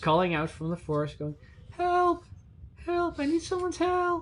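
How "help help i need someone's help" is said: put-on very high young girl's childlike cry. A game master voices someone calling for help from the forest, childlike voice. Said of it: "a childlike or young woman's voice uh".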